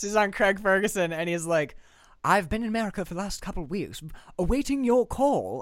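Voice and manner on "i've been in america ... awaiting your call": weird, put-on, upper-crust posh British accent. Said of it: "weird, posh British accent".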